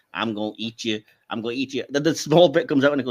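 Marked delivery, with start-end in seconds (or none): 0.1-1.8 campy, animated cartoon alien creature voice. Recalling a cartoon parody of Alien, quoting the alien, Family Guy camp alien voice. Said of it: "they had that kind of camp character voice".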